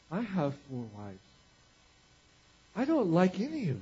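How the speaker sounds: wondering, puzzled voice. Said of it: "he gets this puzzled look on his face".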